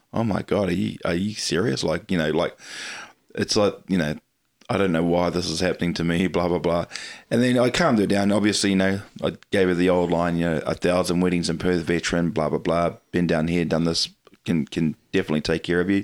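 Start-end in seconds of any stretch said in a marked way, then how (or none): none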